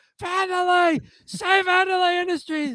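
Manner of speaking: high-pitched hollered shout. Retelling a scene, a character shouting from the bathroom, retelling a shout. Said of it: "you could hear George shouting from the bathroom".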